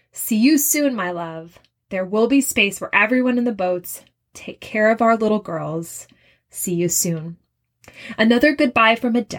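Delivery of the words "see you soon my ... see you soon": plain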